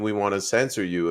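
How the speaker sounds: usual speaking voice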